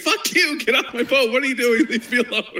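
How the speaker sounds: acted very high-pitched, shrill screaming. Retelling how a player reacted when boarded: imitating someone screaming. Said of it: "The whole guy's screaming".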